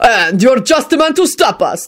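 arrogant, sneering snarl. The leader of six men confronting a lone man, snarled arrogant sneer. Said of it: "the leader snarled with an attempt at an arrogant sneer".

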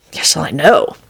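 ordinary delivery

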